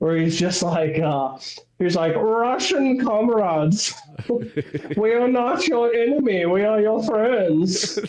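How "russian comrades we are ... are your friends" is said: put-on German announcer accent, slow and high. Recalling a German propaganda guy on a speaker addressing Russians, German propaganda guy accent. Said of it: "like German accent".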